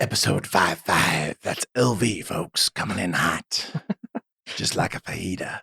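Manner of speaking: eerie, breathy, creepy whispered voice. Podcast host announces the episode number, in a creepy voice. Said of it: "That's [name]'s creepy voice".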